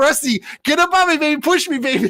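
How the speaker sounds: high screaming at full tilt. Retelling how another driver screamed at him in the race: imitating Vargas screaming. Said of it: "Vargas is screaming at me".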